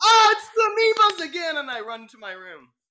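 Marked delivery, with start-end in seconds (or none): 0.0-1.6 very loud, very high-pitched, frightened shriek. Playing a character who finds goo in the fridge: in-character scream. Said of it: "I scream".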